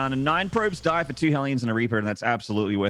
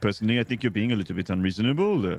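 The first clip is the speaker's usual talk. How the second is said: put-on French accent, lower pitch; 3 semitones lower than usual. Imitating a French friend after saying how he impersonates French people: imitating Todd, French accent. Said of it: "I just do a Todd impersonation".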